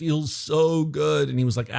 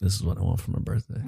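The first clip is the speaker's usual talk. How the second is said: deliberately lowered voice, much lower, quieter; 5 semitones lower, 4 dB quieter than usual. Retelling asking for a lantern battery for a birthday as a kid, deliberately lowered voice. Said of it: "trying to make my voice a little lower".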